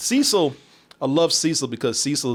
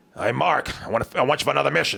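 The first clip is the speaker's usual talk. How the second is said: put-on grizzled old tough-guy voice. Imitating a character's voice talking to Mark: imitating a grizzled old tough-guy voice. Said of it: "Grizzled old voice".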